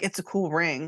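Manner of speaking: put-on nonchalant, offhand mutter. Retelling what Robin said about a ring: imitating Robin muttering nonchalantly. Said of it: "nonchalantly under her breath was like".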